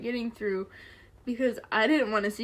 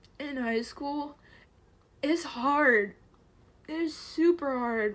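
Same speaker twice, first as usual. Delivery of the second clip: tearful speech, crying while talking, higher pitch; 4 semitones higher than usual. Talking about how hard high school was: crying while talking. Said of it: "I'm an ugly crier".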